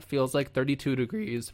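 voice cracking and breaking. Reading the weather numbers for Kivalina, voice cracking. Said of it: "voice crack".

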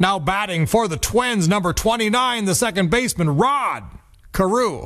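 high, forceful ballpark announcer call, projected widely. Recalling the stadium announcer introducing a batter: Bob Casey announcer voice. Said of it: "the force of a Bob Casey announcer saying".

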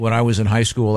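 normal talking voice

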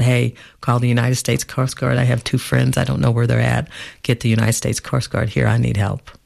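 usual speaking voice

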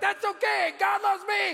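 put-on child shouting, high and eager.

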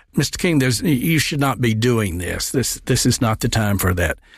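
ordinary delivery

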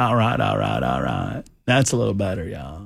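rough, creaky, raspy movie-star voice. Showing another speaker a Matthew McConaughey impression. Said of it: "my Matthew McConaughey sounds like Bill Clinton".

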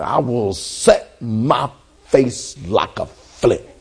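very slow, low, each syllable spoken separately. Showing listeners how to declare the verse, syllable by syllable. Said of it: "You gotta almost like say syllables".

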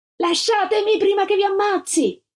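shrieked, very high, screaming. A girl being forced onto a van yells at the people holding her, screaming. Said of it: "urlò la Gilda mentre tentavano di issarla sul furgone".

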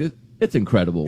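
normal talking voice

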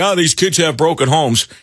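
ordinary delivery

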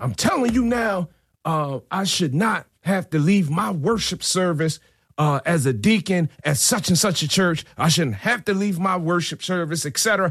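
put-on, very high, furious shouting. Recounting what a man yelled back at him during a confrontation, retelling a yell. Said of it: "And then he yells again".

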